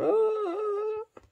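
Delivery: very high, soft mock sobbing oh. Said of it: "puis je pleurais comme une bonne".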